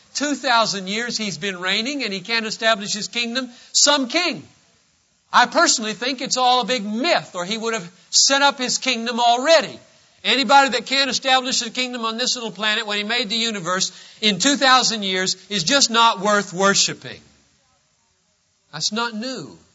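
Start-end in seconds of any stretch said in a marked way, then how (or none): 0.1-17.2 scoffing, sarcastic delivery. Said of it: "people who scoff and say".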